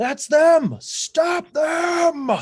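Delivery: very high, very slow, drawn-out, full-lung yell. Voicing someone on the dock spotting the party: yelling at the top of lungs. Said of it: "you hear someone yell at the top of their lungs".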